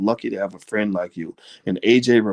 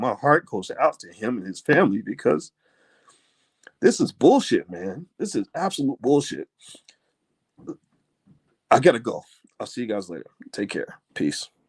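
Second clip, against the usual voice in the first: crying, in tears, voice cracking and breaking. Signing off to everybody, crying for this brother and his family. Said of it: "I'm crying for this brother".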